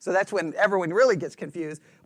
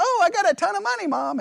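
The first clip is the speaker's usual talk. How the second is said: put-on very high, squeaky, talking-back little-kid voice; 11 semitones higher than usual. Retelling what a little kid says to mom: imitating a little kid. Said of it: "the little kid would be like".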